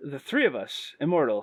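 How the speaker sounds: sarcastic, insincere. Agreeing with another speaker about shared immortality: sarcastic tone. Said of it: "you sound sarcastic when you said that".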